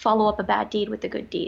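ordinary talk

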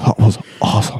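low annoying put-on voice. Friends discussing Napoleon Dynamite, one quotes him in a low, annoying voice. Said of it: "he's got that low, like, annoying voice".

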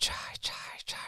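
put-on old witch voice, half-whispered, breathy, calling out. Retelling a little old woman calling out at a family's yurt, witch-like old woman voice. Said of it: "sounded like a witch".

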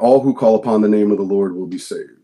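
ordinary talk

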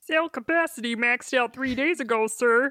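puppet-like character voice. Voicing a lieutenant reporting to a colonel: sounds like Kermit the Frog. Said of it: "Why does the lieutenant sound like Kermit?".

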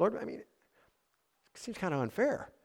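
mock meek, timid, high-pitched pleading protest. Retelling Baruch's complaint to the Lord: imitating Baruch's timid voice. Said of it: "perhaps with a timid voice".

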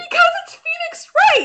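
very high, loud, gleeful shouted outburst.

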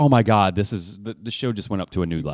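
ordinary talk, nothing marked

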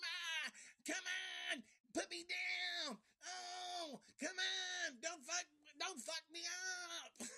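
very high, slow little yelling voice, stretched oh. Retelling a scene where the kids grab Isaac; imitating Isaac's little yelling voice. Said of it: "Because he's got this little voice".

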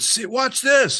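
mock daredevil yell, very high and screaming. Retelling a drunk man yelling from the hangar top: imitating someone screaming.

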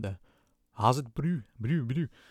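South African Afrikaans-style accent. Explaining that the speaker's own accent doesn't fit, trying an Afrikaner accent. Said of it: "That's all I can say in the Afrikaner accent".

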